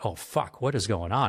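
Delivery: ordinary talk, nothing marked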